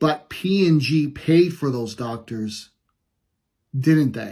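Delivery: mock cool, unruffled, very calm and composed. Retelling a scene, the speaker quotes a woman's reply to a sick woman, retelling a very calm reply. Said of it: "in a very calm voice and just says".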